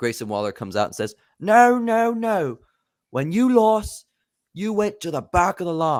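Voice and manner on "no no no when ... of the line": very high, slow drawl in bad Australian accent. Grayson Waller comes out to answer the title-shot demand, bad Australian accent. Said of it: "bad Australian accent".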